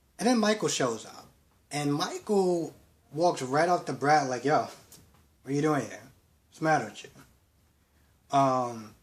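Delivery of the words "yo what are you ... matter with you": ordinary talk, nothing marked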